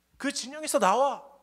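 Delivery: taunting, challenging, high-pitched, loud yelling shout.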